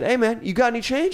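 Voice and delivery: slangy street talk. Retelling a man who asked him for change, in a put-on urban street voice. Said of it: "I don't know why I'm talking like this".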